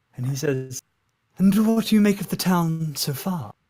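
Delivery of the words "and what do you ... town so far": voice dropped slightly, confiding and intimate. Narrating a game, the speaker voices a town's greeter, voice lowered slightly. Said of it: "he sort of lowers his voice just ever so slightly".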